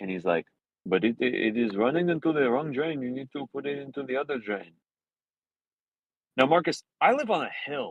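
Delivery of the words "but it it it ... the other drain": put-on Mexican-sounding accent. Retelling what a man at the door said: imitating a man's Mexican-sounding accent. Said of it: "he sounded Mexican".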